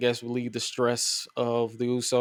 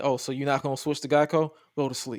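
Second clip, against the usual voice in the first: mock angry, upset voice. Imitating a wrestler as an upset insurance man: imitating an upset insurance man. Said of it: "insurance man that's just upset".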